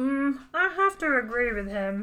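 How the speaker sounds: cartoonish hand puppet voice. Agreeing with a reviewer's verdict on a film: Muppet voice. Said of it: "Whose voice are you doing there?".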